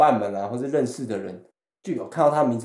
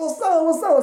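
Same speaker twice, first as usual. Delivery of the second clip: acted, very high, thrilled and excited voice. Retelling own reply to the other person, imitating own excited answer. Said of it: "超激动".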